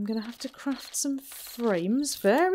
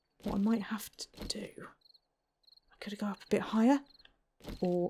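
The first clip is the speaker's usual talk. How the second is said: soft, hushed whisper; 4 semitones lower, 8 dB quieter than usual. The speaker hopes not to be seen as it gets dark, whispering. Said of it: "I don't know why I'm whispering".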